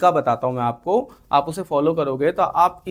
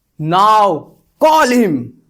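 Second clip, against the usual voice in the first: very loud, furious, barked delivery; 4 semitones higher, 8 dB louder than usual. Explaining how people sometimes say 'now call him', angry and commanding. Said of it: "बहुत गुस्से में लोग बोल देते हैं".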